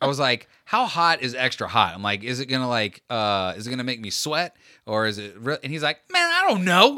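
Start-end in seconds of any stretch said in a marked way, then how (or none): 6.1-7.0 put-on very high-pitched, loud, furious outburst. Retelling a man's answer to the speaker's question; mock super angry. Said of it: "he said it like super angry".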